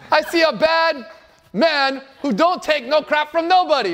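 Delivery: put-on Jamaican accent.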